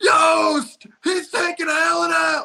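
shouted line. Retelling a movie scene where a player gets taken out: imitating Ryan Gosling yelling. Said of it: "And he yells out".

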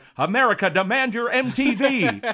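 very high, very loud, drawn-out rock-star yell. Retelling an old TV ad where rock stars shout at the camera: imitating rock stars shouting. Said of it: "basically shouting at the camera".

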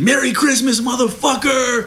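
mock sergeant's scream, shrill and pitched way up. Speaker retells a sergeant ripping open a bag of coke, retelling a scream. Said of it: "he screamed".

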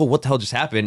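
plain

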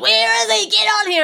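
mock, very high, shrill, rasping, rough yell. Retelling the old sea dog yelling for his mate before the boat leaves; imitating him yelling. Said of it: "he's yelling".

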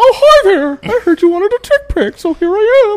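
shrill, high, loud, squeaked-out puppet voice. Speaker demonstrates a joke idea to the others: Muppet voice. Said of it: "make like a Muppet voice".

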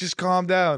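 frazzled, stressed, urging tone. Retelling a woman who got up out of bed, imitating her stressed. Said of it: "she gets up out of bed stressed".

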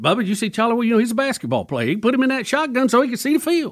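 high, sing-song voice with pitch swooping way up and around. Retelling what a coach said about a player: Bobby Bowden impression. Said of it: "my Bobby impersonation".

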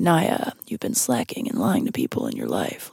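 hushed, quiet whisper. Imitating the movie's torturer judging someone's life: impression of the film's torturer. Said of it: "That's a really good impression".

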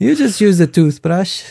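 fake high Scandinavian accent. Doing a joke bit about the Netherlands with another speaker, bad Scandinavian accent. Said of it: "I'm doing a bad Scandinavian accent as a Dutch accent".

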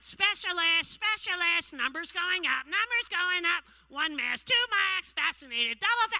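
terrible, very high, shrill, loud cockatoo squawk. Pretending to be a cockatoo in front of a laughing crowd: terrible cockatoo impression. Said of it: "Fucking terrible impression of a cockatoo".

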